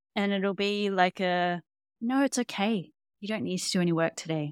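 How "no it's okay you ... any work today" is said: play-acted, very calm, soothing, loving voice. Speaker acts out their higher self's answer; putting on a very calm, loving voice. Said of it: "It's this very calm, loving voice".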